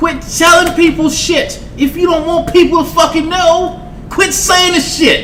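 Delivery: high, exasperated scolding rant.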